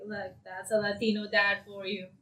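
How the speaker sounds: usual speaking voice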